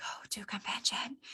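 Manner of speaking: very soft, breathy, barely voiced whisper. Speaking to a group about going to convention, whispering. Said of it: "Should I whisper it?".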